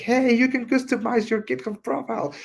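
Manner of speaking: high, big mock shout, announcer style.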